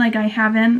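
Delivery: ordinary talk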